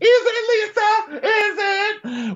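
shrill, very high, very slow drawn-out screaming. Retelling a fight, the speaker acts out Jen standing over Lisa: imitating Jen screaming. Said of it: "screaming at the top of her lungs".

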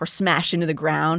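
ordinary delivery

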